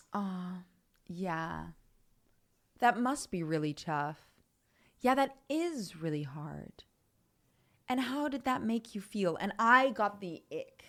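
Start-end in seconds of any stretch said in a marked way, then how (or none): 0.1-9.4 put-on gentle, sympathetic, sweet, soothing counselor voice. Retelling what a therapist kept saying in sessions: imitating a sweet, sympathetic therapist. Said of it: "she was lovely and so sweet".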